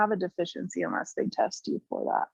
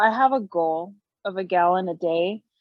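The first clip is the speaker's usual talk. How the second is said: ordinary talk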